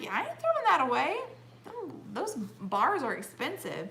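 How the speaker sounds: defiant, challenging delivery.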